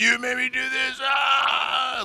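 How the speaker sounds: shrill, very high, very long-held scream. Retelling a movie scene where a fighter throws someone into a creek: imitating a character screaming. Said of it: "just starts screaming".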